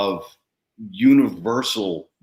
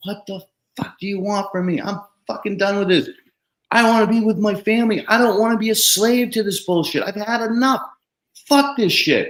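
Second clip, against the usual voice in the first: mock, all-out, very high-pitched, top-of-lungs scream; 12 semitones higher than usual. Retelling kneeling in a rainy parking lot, retelling screaming at God. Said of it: "just started screaming at God, top of my lungs".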